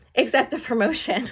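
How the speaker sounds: high delivery with words breaking into laughter. Speaker shares a client's news about a promotion; laughing. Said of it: "Sorry, I'm laughing".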